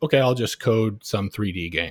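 ordinary delivery

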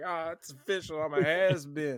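high, weepy, tearful crying voice. Retelling the movie scene where Rick Dalton leaves the restaurant: imitating Rick Dalton crying. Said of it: "he was, like, crying, he's like".

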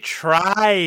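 heavy stress on the words try to. Co-host joking that they are not professional, stress on 'try to'. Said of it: "Emphasis on try to".

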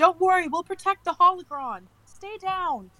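loud high-pitched shout. Voicing a character during a blaster fight, shouting back. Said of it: "would definitely shout back to Victric".

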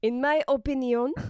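made-up French accent on opinion. Showing how they sometimes like to say a word: put-on french accent. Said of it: "Sometimes when I say opinion, I like to say it like that".

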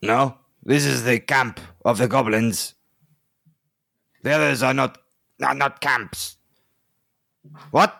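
put-on accidentally slipping into French accent. Voicing a captured goblin answering questions: accidental french accent. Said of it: "It's French now".

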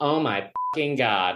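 very effeminate exclaiming tone. A comedian on stage imitates a man in the back of the audience, very effeminate voice. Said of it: "this like very effeminate voice".

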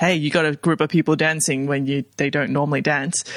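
ordinary delivery

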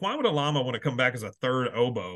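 ordinary talk, nothing marked

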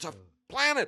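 put-on very high, shrill, enraged drunken yell. Retelling getting angry at a planetarium sign: imitating own screaming. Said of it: "literally screaming like a, like some kind of a drunk homeless man".

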